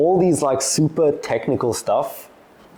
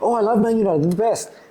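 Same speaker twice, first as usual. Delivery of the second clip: much higher, eager little squirrel voice. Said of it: "they act like a little squirrel".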